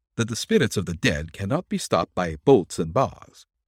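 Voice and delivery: plain reading voice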